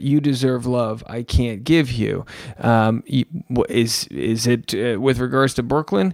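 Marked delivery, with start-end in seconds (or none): none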